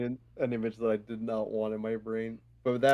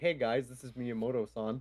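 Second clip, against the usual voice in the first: put-on nonchalant voice, quieter; 5 dB quieter than usual. Imitating a Twitter update posted by Miyamoto: nonchalant Miyamoto impression. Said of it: "I love how nonchalant he is".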